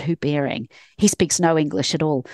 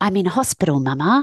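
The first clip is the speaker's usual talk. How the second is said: mock eager, thrilled little child's voice; 2 semitones higher than usual. Retelling a child's bedtime secret dream: imitating a child saying it excitedly.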